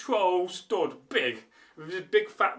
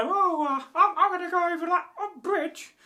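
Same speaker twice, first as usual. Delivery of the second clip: put-on tiny baby goat voice, very high and squeaky; 13 semitones higher than usual. Telling a story where the littlest billy goat speaks, in a squeaky baby goat voice. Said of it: "he had a squeaky voice".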